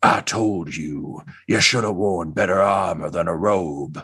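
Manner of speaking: growling, rumbling, growly voice. A voice from the side scolds the one being hit by magic: growly voice. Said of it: "sort of like a a growly voice say".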